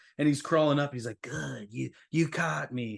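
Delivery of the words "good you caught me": frightening, spooky delivery in a rough, creaky voice. Describing a story page, the speaker voices a crawling character: scary voice. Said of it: "Don't do the voice. It's too scary".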